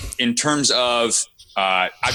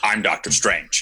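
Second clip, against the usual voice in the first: put-on stiff movie-hero voice, lower pitch; 4 semitones lower than usual. Describing an actor's performance in a movie, imitating Benedict Cumberbatch. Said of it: "Benedict in that movie ... can be so just very much like".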